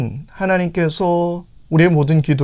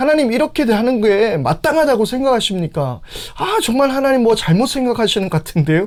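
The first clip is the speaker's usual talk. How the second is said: mock, pitched-up, challenging, argumentative tone; 6 semitones higher than usual. Speaker acts out how prophets questioned God, mock-arguing with God. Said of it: "하나님 앞에 막 따지듯이 물을 때도".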